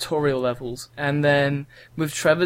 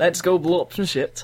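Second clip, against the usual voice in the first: put-on Yorkshire accent. Voicing the game character Trevor after the other says go on: Yorkshire accent as Trevor. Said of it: "I gave him an Yorkshire, like, accent".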